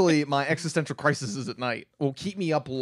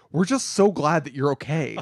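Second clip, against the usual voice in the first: mock, utterly heartfelt, sincere, earnest voice. Retelling what Ryan said on the phone: Ryan's very sincere voice. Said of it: "in the most sincere voice".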